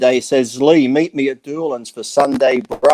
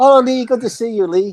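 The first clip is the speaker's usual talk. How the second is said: put-on Chinese accent, pitched very high; 9 semitones higher than usual. Impersonating someone greeting Lee at Sparky's, put-on Chinese accent. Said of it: "That's my Chinese. I'm not being racist. That's my impersonation".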